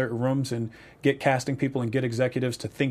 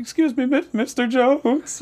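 reenacted voice crack, going higher; 12 semitones higher, 5 dB louder than usual. Recounting going up to a man to say hi, retelling a voice crack. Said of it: "Like voice crack".

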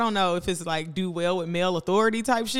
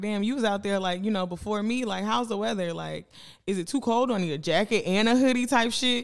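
ordinary delivery

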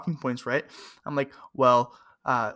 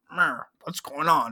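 put-on grumpy old man voice. Retelling what an older man said on walking in: imitating grumpy Andrew. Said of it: "a kind of a grumpy, a grumpy old".

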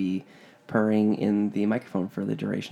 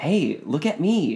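frantic, high, very slow, drawn-out call; 6 semitones higher than usual.

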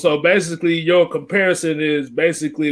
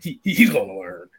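very low-pitched put-on cartoon voice; 8 semitones lower, 3 dB quieter than usual. Repeating that he's gonna learn, doing it in a Beavis voice. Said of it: "I'm gonna do it in my Beavis voice".

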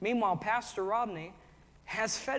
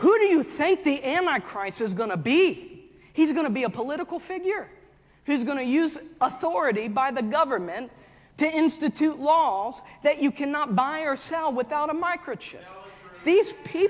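very loud, pitched-up, worked-up preacher-style tirade; 6 semitones higher, 9 dB louder than usual. Speaking to listeners about pastors and the church, the speaker gets worked up. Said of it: "Sorry, I gotta calm down a little bit".

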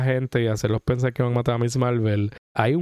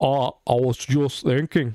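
put-on Scottish accent. Quoting how Grant Morrison talks, in a Grant Morrison Scottish accent. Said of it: "that's my Scottish accent".

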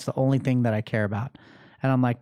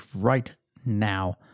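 low, firm, stern dad voice; 4 semitones lower than usual. Retelling scolding his kids, repeating the command in his dad voice. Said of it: "my dad voice".

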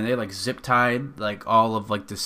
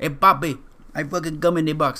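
put-on poorly done Dominican accent; 4 semitones higher than usual. Acting out a Spanish guy in a bit, the speaker slips into a terrible Dominican accent. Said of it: "It's more Dominican".

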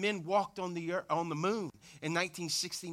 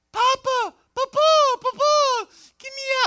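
mock crying child's wail, very high, loud, drawn-out; 16 dB louder than usual. Retelling a grandson in a playpen calling to his grandfather: imitating a crying child. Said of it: "And he's crying".

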